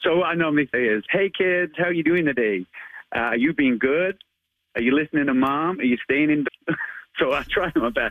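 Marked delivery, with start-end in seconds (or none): 1.1-6.7 put-on American accent. Asked by the host, a Spider-Man performer gives his usual greeting to kids: Spider-Man American accent. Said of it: "give us your American accent to Spider-Man".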